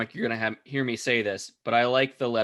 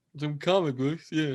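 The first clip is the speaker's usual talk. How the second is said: clumsy put-on drunk voice; 4 semitones higher than usual. Joking with co-hosts about switching to a kid-appropriate topic, in an attempted drunk person voice. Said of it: "trying to do a drunk person voice".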